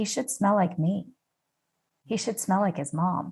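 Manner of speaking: ordinary talk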